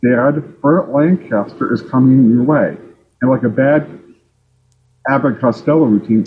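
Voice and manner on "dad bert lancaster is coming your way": ordinary talk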